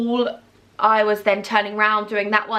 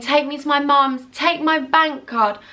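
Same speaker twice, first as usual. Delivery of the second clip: re-enacted scream, higher, slower; 5 semitones higher than usual. Retelling being carried by James, the speaker acts out her own screaming. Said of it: "I'm screaming".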